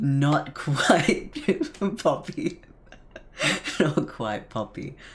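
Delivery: giggling and laughing through the words. Correcting a mix-up mid-explanation: giggling. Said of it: "sorry for giggling".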